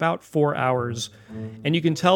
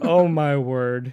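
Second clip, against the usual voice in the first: put-on southern belle voice. Joking that opossums are like Scarlett O'Hara: Scarlett O'Hara voice. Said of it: "they're like Scarlett O'Hara".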